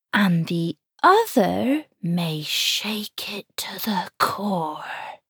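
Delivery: put-on whisper in a Cornish accent. Narrator reads a mother's warning to her young daughter Star: ominous Cornish whisper. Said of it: "Her Cornish accent trailed off in an ominous whisper".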